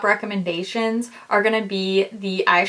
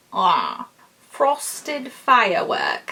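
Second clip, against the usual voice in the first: clumsy, badly done fake British accent. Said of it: "Why am I doing a bad British accent at that?".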